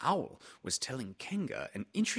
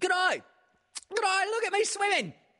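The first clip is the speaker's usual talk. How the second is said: very high, loud, squeaky little voice; 8 dB louder than usual. Someone calls out from the middle of a pool, squeaking. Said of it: "squeaked Roo".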